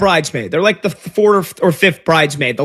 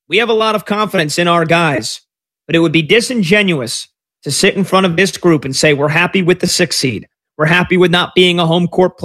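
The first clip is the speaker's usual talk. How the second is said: normal talking voice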